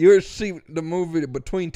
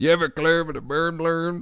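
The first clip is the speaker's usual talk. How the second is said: put-on St. Louis accent, vowels bent to er. Complaining about how people talk in St. Louis and Memphis: mock St. Louis accent. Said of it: "Why do they talk like this here?".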